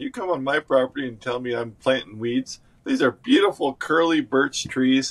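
ordinary delivery

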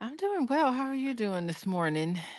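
soft, drowsy, sleepy morning voice. Greeting her husband on their show Pillow Talk, in a sleepy voice. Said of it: "You got your sleepy voice".

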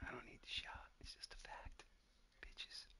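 soft whispered taunting. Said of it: "you gotta whisper that".

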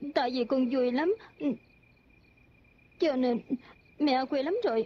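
tearful, crying speech, words coming through tears. In a drama, a child answers a mother asking why they cry, crying. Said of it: "con mừng mà tại sao lại khóc chứ?".

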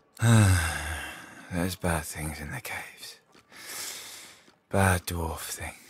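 sleepy mumbling. Narrator voicing a sleeping man who mumbles in his slumber, mumbling in his sleep. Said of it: "He mumbles in his slumber".

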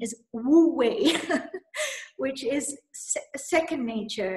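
speaking while breaking into laughs. Naming a concept whose name is hard to pronounce: laughing while talking. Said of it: "I can't say this without laughing".

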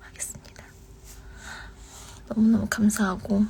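soft unvoiced whisper.

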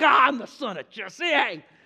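loud, all fired-up, excited voice. Retelling David answering Saul after his victory over Goliath: imitating David fired up. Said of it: "He's all fired up".

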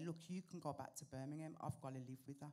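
ordinary talk, nothing marked

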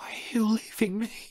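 barely voiced whisper. Reading a story aloud, a dying scene: whispering. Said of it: "she whispers".

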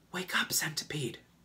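hushed whisper under the breath. James wakes the sleeping centipede: whispering. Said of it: "whispered James".

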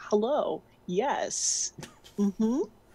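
put-on blue-collar worker voice. Acting out a blue-collar minimum wage guy talking to punk kids. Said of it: "some very blue-collar minimum wage guy".

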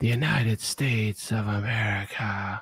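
very slow, drawn-out, weird, creepy half-whisper. Retelling what Biden did again today: Biden creepy half-whisper. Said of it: "He was like".

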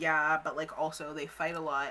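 plain

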